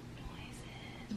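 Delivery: soft, voiceless ASMR whisper. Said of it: "that's the whole, like, "I'm whispering"".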